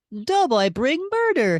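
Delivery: very high, loud cartoon mascot voice. Trying out a voice for the character Doughboy: Pillsbury Doughboy voice. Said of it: "Let me see if I can do".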